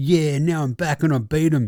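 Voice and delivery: put-on boastful player voice. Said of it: "He's like".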